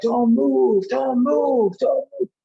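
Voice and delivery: play-acted, nonstop, very high repeated screaming. Speaker trapped in a car retells a paramedic reaching him: imitating a screaming paramedic. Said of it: "And he's just screaming".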